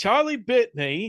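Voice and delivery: put-on English accent. Retelling what a partner said in her sleep: imitating Tara's English accent. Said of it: "she had a fucking English accent".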